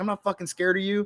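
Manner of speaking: heated, angry shout. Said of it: "he's cussing it out".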